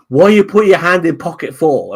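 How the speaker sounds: very high, loud, startled, alarmed voice. Retelling how the woman behind the counter, holding a baseball bat, challenged him: imitating the shop woman's alarmed demand. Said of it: "Like that".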